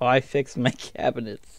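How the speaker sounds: talking with soft laughter through the words.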